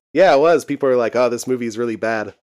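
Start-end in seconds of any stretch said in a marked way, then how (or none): none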